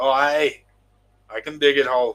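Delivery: attempted, fake Scottish accent. Telling a joke about a foreman and his crew, attempted scottish accent. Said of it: "whatever that accent was".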